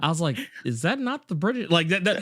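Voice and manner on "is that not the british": play-acted, totally earnest, dead-serious, pitched up. Retelling own earlier question about a currency: imitating own super serious tone. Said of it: "my super serious ass".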